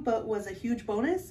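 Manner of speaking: plain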